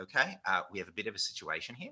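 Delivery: soft, calm put-on English accent. Speaker imitating a man announcing a situation, put-on calm English accent. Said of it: "very calm from England".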